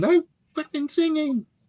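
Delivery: mock very high-pitched, shrill shout. Joking about a kid playing a tune behind them, imitating a shouting mother. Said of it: "the mother shouts at him".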